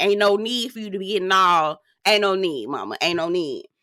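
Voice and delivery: ordinary talk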